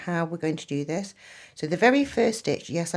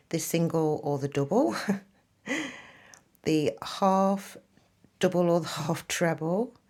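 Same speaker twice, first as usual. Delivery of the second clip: talking through little giggles. Teaching crochet stitches, amused by their different names, giggling while talking. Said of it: "I'm just giggling".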